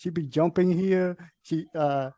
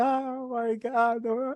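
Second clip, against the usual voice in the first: put-on high, drawn-out sobbing wail in a little boy voice; 6 semitones higher than usual. Retelling how a son reacted after scratching his leg: imitating a child crying. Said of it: "crying like".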